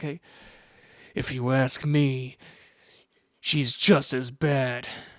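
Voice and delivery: very slow, tense speech through clenched teeth. Showing a voice-acting tip for a tense sound: talking through gritted teeth. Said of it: "maybe grit your teeth".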